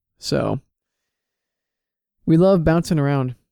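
dry, sarcastic tone, not meaning it. Summing up thirty hours of driving over break, sarcastic. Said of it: "are you being sarcastic right now?".

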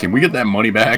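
ordinary delivery

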